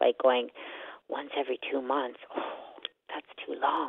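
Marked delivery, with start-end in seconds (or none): 1.1-3.9 put-on muttering under breath, quieter. Retelling a reaction to a partner's comment: retelling muttering under breath. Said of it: "talking under my breath".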